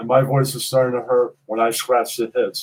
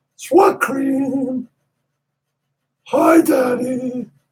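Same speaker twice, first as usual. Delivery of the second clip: weak, very high-pitched voice, slow, drawn out, weakening; 13 semitones higher, 4 dB louder than usual. Asked to say a couple of things that he said, imitating a weak high-pitched voice. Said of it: "Then I would be able to do the high pitch better".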